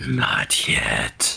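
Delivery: dark, very low, rough, creaky menacing voice. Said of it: "like, really menacing".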